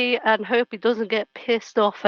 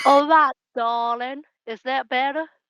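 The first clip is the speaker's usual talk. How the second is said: botched put-on Southern accent; 3 semitones higher than usual. Trying a word again after being corrected: bad southern accent. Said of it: "continue messing up a Southern accent".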